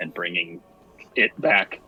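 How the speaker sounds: muttering under the breath. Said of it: "more under my breath to the group".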